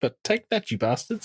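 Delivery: terrible, very high, put-on New Zealand accent. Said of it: "my terrible New Zealand accent".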